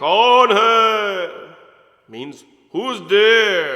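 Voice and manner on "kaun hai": big booming calling voice, hai stretched out. Storyteller voicing the voice calling again while Arjun hides, big voice. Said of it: "Then the voice come again".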